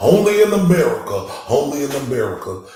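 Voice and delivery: proclaiming, boxing-promoter style voice. Reacting to a court case, doing a Don King voice. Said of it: "Don King voice".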